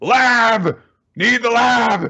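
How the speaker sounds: very high, very slow, loud drawn-out scream. Retelling a fight scene where a character calls out: imitating a scream. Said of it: "she just screams out at the top of her lungs".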